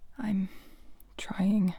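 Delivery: tiny, shrunken, very small and soft voice. An author narrating her own reply about Athena, in a very small voice. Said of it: "I say in a very small voice".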